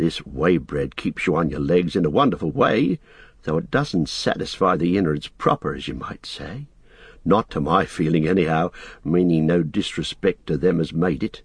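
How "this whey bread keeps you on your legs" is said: usual speaking voice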